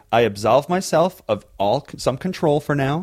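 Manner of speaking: ordinary delivery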